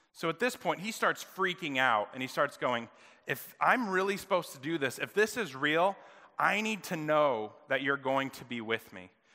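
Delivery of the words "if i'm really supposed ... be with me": plain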